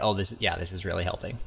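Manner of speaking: mock ironic, not-meaning-it, sarcastic delivery. Acting out a hypothetical reaction to a long string of threes: imitating sarcastic remark.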